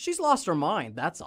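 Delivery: mock, very matter-of-fact, stating-the-obvious tone. Retelling a character's reply to a question about a teammate, delivered matter-of-factly. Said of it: "Very matter-of-factly".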